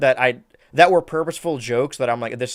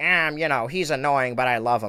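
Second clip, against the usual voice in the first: usual put-on cartoon squid voice; 4 dB quieter than usual. Retelling a movie scene where Squidward speaks: Squidward voice. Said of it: "in his normal Squidward voice".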